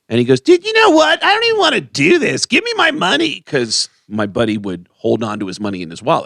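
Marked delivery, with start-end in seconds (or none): 0.4-3.4 very high, loud, swooping bad-mood yelling. Retelling how a man in a bad mood yelled at a security guy, retelling a yell. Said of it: "he's yelling at the security guy".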